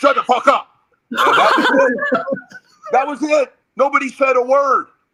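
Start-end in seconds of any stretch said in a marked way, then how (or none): 0.0-0.7 fed-up, frustrated outburst in a raised voice. Retelling a teammate silencing the huddle: imitating a raised voice. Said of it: "when Dwight raised his voice in that huddle".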